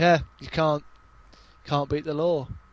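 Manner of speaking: ordinary talk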